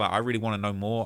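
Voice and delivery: ordinary talk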